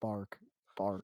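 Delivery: low, flat, robotic monotone. Imitating the mechanized boss Butch Zero from a game, in a really monotone voice. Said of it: "It's just like a really monotone voice".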